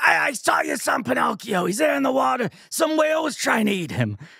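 pack-a-day smoker's voice, way up. Imitating a gossipy seagull in a movie talking to Geppetto, in a Lorraine Bracco chain-smoker voice. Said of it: "sounding like she chain-smoked 15 packs of cigarette".

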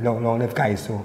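plain

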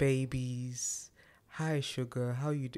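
slow, unhurried, lovely, beautiful voice. Describing a lady with a beautiful voice: Tabitha Brown impression. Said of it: "She talks like this".

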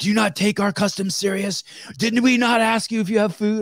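very high-pitched, shrill yelling. Retelling how customs officers questioned a traveler: imitating customs officers yelling. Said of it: "they started yelling at him".

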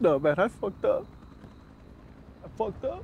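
sobbing. A man sad about his divorce, talking to a companion during fireworks, crying. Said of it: "Stop crying".

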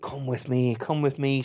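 put-on, seductive whispering. Retelling an owner whispering in another's ear: imitating a seductive whisper. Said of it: "seductive like".

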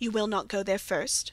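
ordinary delivery

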